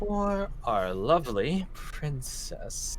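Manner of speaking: muttering under her breath. Having knocked an arrow from the attendant, she speaks muttering under her breath. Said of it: "just mutters under her breath initially".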